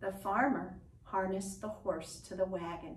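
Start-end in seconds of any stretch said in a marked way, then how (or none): none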